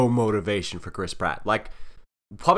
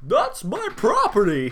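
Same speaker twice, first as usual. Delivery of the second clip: serious, earnest, high voice with swooping pitch; 8 semitones higher than usual. Doing a serious Jimmy Stewart voice for a movie character. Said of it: "like a serious Jimmy Stewart".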